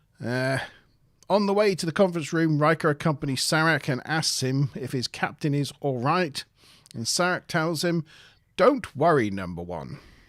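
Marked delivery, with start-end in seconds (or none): 8.6-10.0 reassuring, low, put-on English accent. Retelling an episode, the ambassador reassures Riker, in an English accent. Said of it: "in like an English accent".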